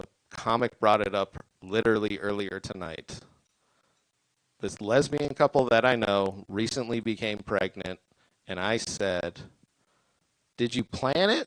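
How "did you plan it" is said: voice breaking partway through. Retelling asking a pregnant couple a question, with the voice cracking. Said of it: "My voice cracked like that when I said it".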